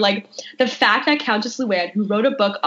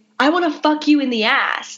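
put-on scream, higher pitch; 5 semitones higher than usual. Retelling how three men start screaming into a megaphone: imitating someone screaming. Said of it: "just start screaming".

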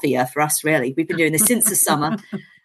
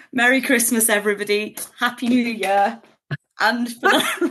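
giggling through words, higher; 7 semitones higher than usual. Redoing the ending after flubbing it, laughing while talking. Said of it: "I can't now, I'm laughing".

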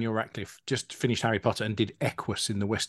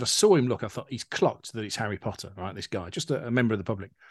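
ordinary delivery

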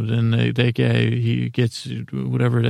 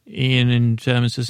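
usual speaking voice

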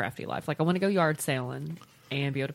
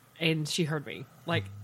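ordinary delivery

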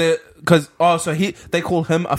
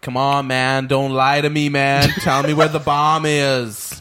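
put-on American accent; 2 semitones lower than usual. Teasing a friend about doing accents, the speaker slips into a put-on american accent. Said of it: "you do American accent".

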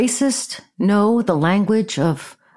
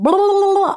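mock nagging whine, very high pitched; 12 semitones higher than usual. Retelling a phone call, mocking how the caller sounded: mocking someone's whining. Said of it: "that's how you fucking sound".

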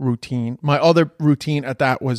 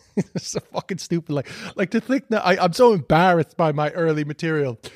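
usual speaking voice

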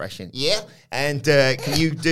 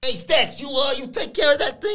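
very high-pitched voice; 11 semitones higher than usual. Acting out a scene with Tony D asking about a task: Tony D impression. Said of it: "Tony D says".

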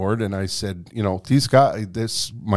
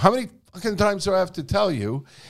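mock, high, yelled outburst; 9 semitones higher, 5 dB quieter than usual. Retelling going upstairs and yelling at the guys: retelling own yell. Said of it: "and I yelled".

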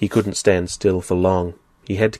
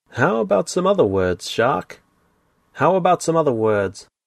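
sly, pitched-up, needling voice; 8 semitones higher than usual. Narrating a story: a tentacled attacker taunts the captive shark in a sly voice. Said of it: "He heard a sly voice say".

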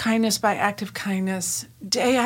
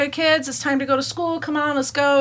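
mock high half-shouted call; 6 semitones higher, 3 dB louder than usual. Retelling calling the kids to go to school: retelling shouting over shoulder. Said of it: "I'm kinda shouting back over my shoulder".

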